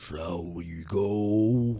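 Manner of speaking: huge resonant, booming, echoing voice, drawn-out "go". In a roleplaying game, voicing a massive guardian speaking the common tongue: booming, echoing voice. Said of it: "this booming, echoing voice".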